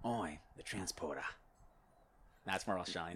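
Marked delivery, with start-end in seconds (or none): 0.0-1.2 deliberately bad put-on British accent. Put on the spot to perform: worst Jason Statham impression. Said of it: "I love doing Jason Statham".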